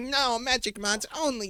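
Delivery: put-on very high, slow young teen kid voice. Recalling own view on mods at age thirteen; impression of thirteen-year-old self. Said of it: "my impression of thirteen year old me".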